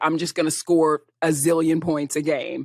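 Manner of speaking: normal talking voice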